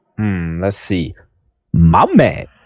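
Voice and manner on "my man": weak voice with pitch rising at the end. Asked for an impression, performing the catchphrase: Denzel Washington impression. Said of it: "do you have a good Denzel impression".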